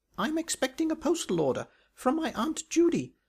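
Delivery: squeaky voice at a very high pitch. Looking for a way to escape, he makes an excuse, squeaking. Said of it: "squeaked Bunter".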